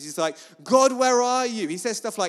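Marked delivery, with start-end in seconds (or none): 0.6-1.7 put-on high, loud, stroppy teen outburst. Describing David's worship songs, imitating David as a stroppy teenage boy. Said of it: "sounds more like a kind of stroppy teenage boy".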